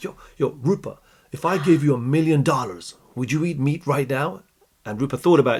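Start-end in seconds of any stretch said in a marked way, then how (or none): 0.0-4.4 put-on American accent. Retelling a dinner in London, the speaker quotes their mentor in David's American accent. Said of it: "in his American accent".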